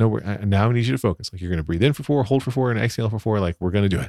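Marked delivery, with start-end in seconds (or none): none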